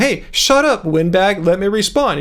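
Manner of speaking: usual speaking voice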